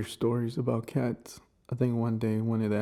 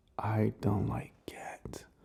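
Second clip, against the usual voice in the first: slow, hushed, secretive whisper; 5 dB quieter than usual. Confessing a dislike of cats so the back can't hear: whispering. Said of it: "I don't even know why I whisper that".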